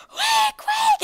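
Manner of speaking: very high, loud guinea pig squealing screech. Speaker retelling how she suddenly started screaming, imitating a guinea pig screech. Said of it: "she's just screaming like I murdered her".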